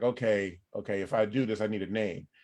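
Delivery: normal talking voice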